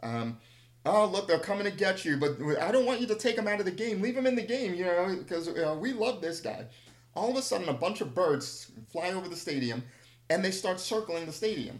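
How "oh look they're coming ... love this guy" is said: jeering, heckling yell. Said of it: "I start yelling out there".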